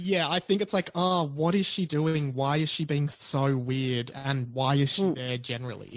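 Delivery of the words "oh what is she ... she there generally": slow, scornful, disdainful, contemptuous drawling tone. Talking about a celebrity's odd red carpet behaviour: contemptuous tone. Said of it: "the tone of, of contempt in your voice".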